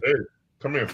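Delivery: put-on big, loud shouted call as if from afar. Retelling a bully calling across a parking lot: imitating a big deep voice screaming. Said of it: "big deep bad voice screaming across".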